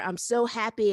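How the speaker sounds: bubbling, happy, excited, delighted voice. Podcast host welcoming her guest, audibly happy. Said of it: "as you guys can hear by the sound of my voice".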